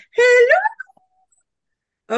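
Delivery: very high, loud, sing-song put-on voice. Co-host greeting on air after a dare, in a higher-pitched voice. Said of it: "I was using the higher pitch voice".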